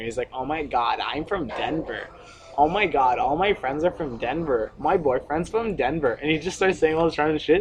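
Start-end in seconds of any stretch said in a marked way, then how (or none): 0.3-6.1 derisive, needling, taunting, jeering voice. Retelling a friend imitating a girl at a party, mocking imitation. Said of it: "imitating her".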